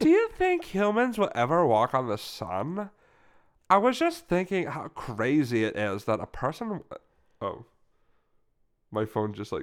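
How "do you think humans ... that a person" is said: put-on chatty California girl voice, high and swooping. Starting a bit over for the other speaker: california girl voice. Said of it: "I'm doing like a California girl".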